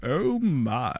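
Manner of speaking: quiet, calm put-on voice. Correcting another speaker's impression: calm George Takei voice. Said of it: "it's always very calm".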